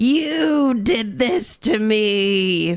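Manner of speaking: mock very slow, cryptic delivery, me drawn out. Retelling pointing at someone who checks on them while sick, acting cryptic. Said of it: "I'll cryptically go".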